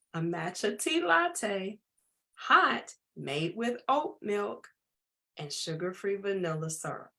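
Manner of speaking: spelled out carefully, slow and deliberate. Repeating the same words a second time for listeners, saying it slowly. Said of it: "Let me say it again slowly".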